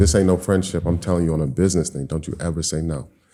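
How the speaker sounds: put-on dead-serious, intense delivery. Retelling what his guy said on a business matter, acting out intense words. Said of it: "he said it like intense".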